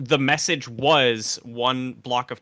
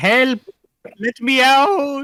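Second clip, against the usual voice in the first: very high, very loud, very slow, drawn-out pleading cry; 13 semitones higher, 8 dB louder than usual. Acting out a man trapped inside the AI machine: imitating a trapped man pleading to get out. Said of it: "He's saying".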